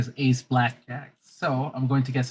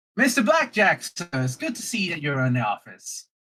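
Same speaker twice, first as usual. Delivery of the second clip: sudden, high, loud yell; 5 semitones higher than usual. Voicing a character who greets mister blackjack at the office: yelling out loud. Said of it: "just yells out loud and says".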